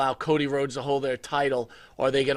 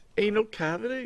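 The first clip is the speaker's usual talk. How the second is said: fake British accent, higher; 7 semitones higher, 3 dB quieter than usual. Saying a phrase on request in British: put-on British accent. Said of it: "Can you say anal cavity in, in British?".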